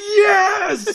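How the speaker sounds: very high, drawn-out, excited cheering yell. Recounting a hyped man at a tournament, the speaker re-enacts his excited yell. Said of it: "he's so excited".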